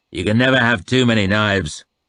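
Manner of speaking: growled in a deep, grinding bass voice. Reading a story aloud, voicing the Northman's line in a deep, grinding growl. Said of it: "he growled in a deep, grinding voice".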